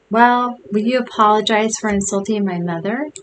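ordinary talk

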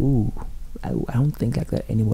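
ordinary delivery

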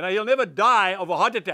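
normal talking voice

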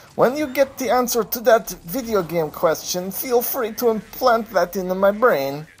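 put-on Eastern European accent. Reading out a question sent in by a user: eastern european accent. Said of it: "I'm going to do this in like an Eastern European accent".

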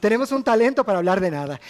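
normal talking voice

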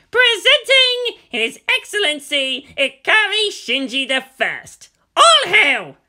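very high, booming, loud high-pitched bellow. Narrator reads a character announcing his friend at the door; bellowing. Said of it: "stood by the door and bellowed".

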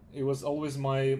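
normal talking voice

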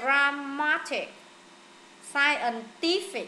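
slow, stress on the syllable before -tic.

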